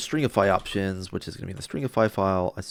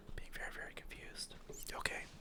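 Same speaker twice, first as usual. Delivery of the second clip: whispering, much quieter. Talking to themselves while confused by a coding error, whispering. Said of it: "Don't know why I'm whispering".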